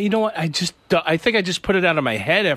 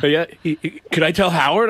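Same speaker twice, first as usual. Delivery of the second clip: ordinary delivery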